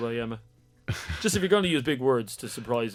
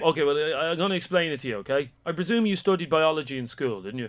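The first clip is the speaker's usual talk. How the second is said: ordinary talk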